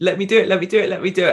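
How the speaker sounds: mock bursting, eager, excited pleading. Recalling meeting a casting director, the speaker re-enacts their past self excitedly shouting. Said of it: "And I was really shouting".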